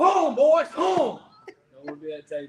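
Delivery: loud, very high holler with big swooping pitch. Imitating the coach coming in upset at halftime: imitating Coach Huff upset. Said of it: "Give me your great impression of how Coach Huff acts when he's upset with you guys".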